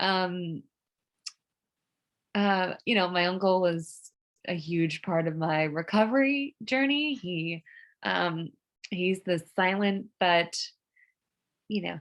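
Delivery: teary, emotional, choked-up voice, close to tears. Talking about family and saying they are about to cry again, emotional, close to crying. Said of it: "I'm going to cry again. Wow, I'm emotional".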